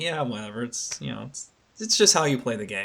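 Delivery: put-on nonchalant, casual-sounding tone. Retelling how a presenter announced a game feature: nonchalant Koizumi impression. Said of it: "a nonchalant way where it's like".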